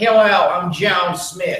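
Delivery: very slow speech, just a touch American accent. Coaching a performer on a line, showing a slightly american accent. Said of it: "perhaps a little bit more American".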